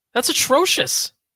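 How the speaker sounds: voice cracking and breaking, very high. Discussing penalty-kill rankings with another speaker, voice cracking. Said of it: "My voice is cracking like I'm a teenager".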